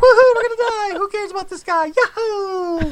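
mock very high carefree whooping, "yahoo" drawn out. Retelling how Kara cheered during the show: imitating Kara's carefree cheer. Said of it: "and Kara's like".

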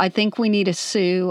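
plain

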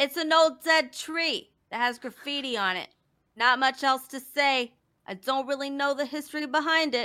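put-on New Jersey accent. Giving it a try after being encouraged, speak in a New Jersey accent. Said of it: "let me see if I could do a New Jersey accent".

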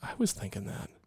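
hushed. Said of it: "I'm like".

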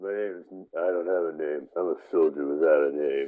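deep, loud, booming, marble-mouthed voice. Introducing himself on a movie podcast: Stallone impression. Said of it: "trying to do a Stallone impression".

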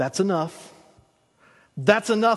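put-on firm, stern yet gentle, loving tone. Retelling God's answer to Moses: God speaking sternly yet lovingly. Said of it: "God very sternly, yet very lovingly".

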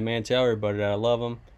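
ordinary talk

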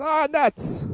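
put-on high old-timey newsman voice. Joking about an old-timey news guy: old-timey newsman voice. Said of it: "You hanging out with the old-timey news guys?".

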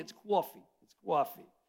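put-on New York accent. Pastor showing how he was taught to speak new york: new york accent. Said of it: "you just add a W to everything".

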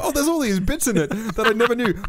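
sounding surprised.

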